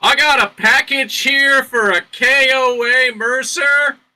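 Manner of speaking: top-of-the-lungs scream, very high, very loud, shrill. At an ordinary wall, the character announces a package delivery, screaming at top of lungs. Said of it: "So I scream at the top of my lungs".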